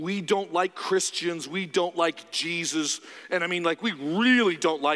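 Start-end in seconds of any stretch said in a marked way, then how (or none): none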